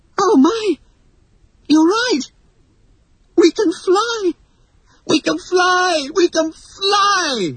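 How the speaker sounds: very high cry, word fly stretched long. Two children rising from the floor after the pixie dust, crying out. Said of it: "cried John and Michael".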